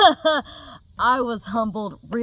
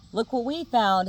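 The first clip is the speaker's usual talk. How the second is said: mocking, smug, show-off taunting gloat; 3 dB quieter than usual. Retelling an officer throwing the found money up: imitating an officer taunting. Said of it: "kinda taunting me".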